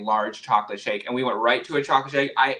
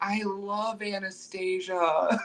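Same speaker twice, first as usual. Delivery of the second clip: put-on drugged-up, drunk voice, pitched up; 8 semitones higher, 6 dB quieter than usual. Retelling what the speaker said while drugged up during the procedure, acting drunk. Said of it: "and I'm like drunk".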